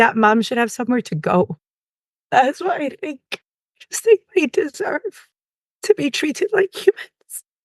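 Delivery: crying through the words. Talking about a family denied a place to grieve: crying. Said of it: "Usually it's Pete I'm crying to".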